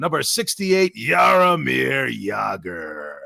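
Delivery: mean, swooping announcer voice, one word drawn out. Showing how he voiced a player's number and name: making it sound mean. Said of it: "let's make him sound mean".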